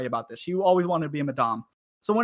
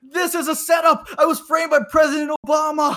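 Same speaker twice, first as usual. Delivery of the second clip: very high, loud shouted yell; 11 semitones higher, 7 dB louder than usual. Retelling an arrested guy yelling at the cameras: imitating a man yelling. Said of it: "he's yelling at the cameras".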